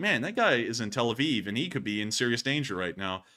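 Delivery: ordinary delivery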